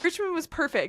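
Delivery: voice rising with emotion. Looking back on finishing the richmond marathon, getting emotional. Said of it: "I'm getting emotional".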